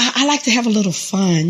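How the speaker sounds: ordinary talk, nothing marked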